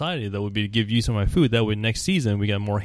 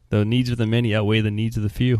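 ordinary delivery

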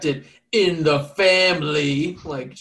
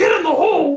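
shrill, very high, loud shriek; 13 semitones higher, 6 dB louder than usual. Acting out someone out there who sounds like Miss Piggy, in a Miss Piggy voice. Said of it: "It's just Miss Piggy out there, just like".

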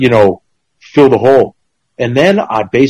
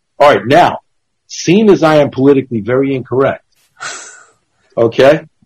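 plain

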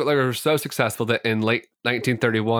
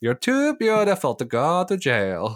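put-on high, sing-song Scandinavian accent; 5 semitones higher than usual. Retelling a stranger's offer to take Mary's place in prison, try again in an attempted Scandinavian accent. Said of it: "That was a good attempt".

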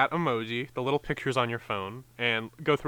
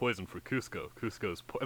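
deep, low, rumbling big cartoon-sidekick voice; 4 semitones lower, 9 dB quieter than usual. Trying a Kronk impression while saying it cannot be done: Kronk voice by Patrick Warburton. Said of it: "I can't do a Warburton".

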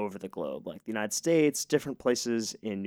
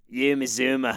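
bad put-on New Zealand accent, near Australian; 2 semitones higher, 3 dB louder than usual. When asked for one, says a name: bad attempt at new zealand accent. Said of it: "I think that was Australian".

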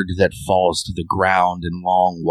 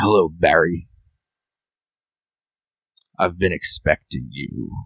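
put-on croaking aged male voice. Narrator voices an old man greeting barry, in a croaky old man voice. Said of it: "in a croaky voice".

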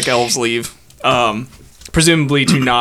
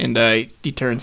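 ordinary delivery

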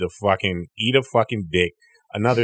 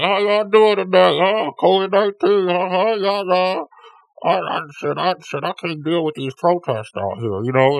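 muffled, pitched-up voice smothered behind a mask; 11 semitones higher, 4 dB louder than usual. Showing how they talk to people who cannot see their face, talking with mouth covered. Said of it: "So now I'm talking like this with my".

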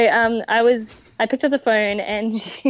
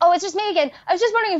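very high, words tumbling out fast, rushed; 9 semitones higher than usual. Retelling a caller who keeps phoning back: imitating someone talking really fast. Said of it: "says it really, really fast".

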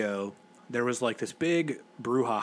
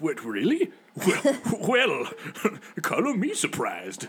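old executive voice, pitched-up, swooping, mock astonishment; 5 semitones higher than usual.

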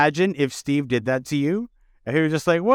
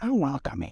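ASMR whisper, quieter and lower; 3 semitones lower, 8 dB quieter than usual. Doing a joke bit of introvert asmr, in an asmr whisper. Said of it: "Should we get into ASMR?".

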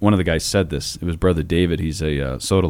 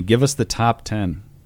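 ordinary delivery

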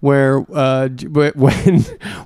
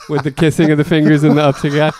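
ordinary delivery

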